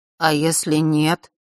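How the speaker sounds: shaky, trembling, quavering voice. After Elena insists Nort must be heir, Nort answers in a trembling voice. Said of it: "произнес Норт дрожащим голосом".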